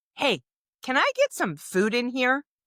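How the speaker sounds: acted, very unruly, demanding, sing-song voice. Retelling what mom said after weeks of not eating: imitating an unruly demand. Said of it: "in very unruly fashion".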